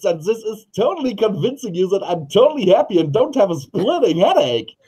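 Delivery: very high, put-on sunny, cheerful voice. Showing how to hide a splitting headache, speaking in a fake cheerful voice. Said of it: "if I sit here like this and speak like this".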